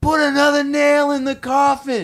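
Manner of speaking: very loud, high, shrill screamed cheer. Recalling his dad on the sports sideline, retelling dad's sideline scream. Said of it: "he'd be on the sideline screaming".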